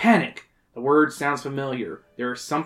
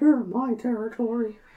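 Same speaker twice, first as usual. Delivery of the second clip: put-on bear voice, pitched higher; 9 semitones higher than usual. Reading a story aloud, voicing the bear who speaks: Jim Cummings voice. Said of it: "Is that Jim Cummings?".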